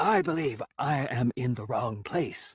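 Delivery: slow, deliberate, rasping voice. Narrator, as the first-person character, addressing the dark oculator, rasping voice. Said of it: "speaking with a rasping voice".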